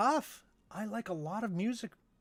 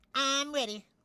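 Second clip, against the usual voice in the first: high, full cartoon character voice; 7 semitones higher than usual. Asked if everyone is ready for SpongeBob, the performer answers in SpongeBob voice. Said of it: "Are you guys ready for SpongeBob?".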